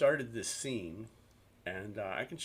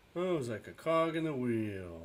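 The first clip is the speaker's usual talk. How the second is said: mock-bored, put-on bored tone. Show a listener how he sounds talking about working for these companies, imitating someone sounding bored. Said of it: "he sounds kind of like... I feel so bored".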